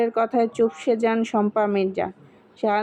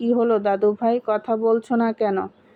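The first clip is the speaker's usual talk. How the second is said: usual speaking voice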